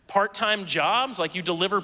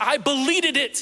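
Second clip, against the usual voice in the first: put-on high, tearful, wailing scream like a crying child; 6 semitones higher, 3 dB louder than usual. A parent recalling their son with huge tears in his eyes, imitating Eli crying and screaming. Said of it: "with these huge tears in his eyes and he screams".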